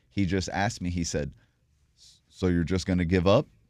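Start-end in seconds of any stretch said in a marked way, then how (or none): 2.3-3.5 big, loud, booming voice. Retelling what a divine voice asked in a hospital bed: James Earl Jones voice. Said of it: "a James Earl Jones kind of voice".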